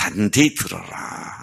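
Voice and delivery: put-on Gyeongsang accent.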